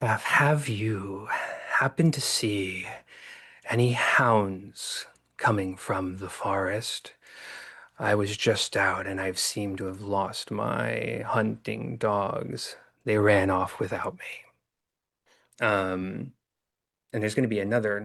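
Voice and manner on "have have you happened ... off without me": voice sounding like an echo run in reverse. Voicing the evil thing behind the door, asking about lost hounds: voice like a backwards echo. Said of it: "a voice that kind of sounds like an echo moving backwards".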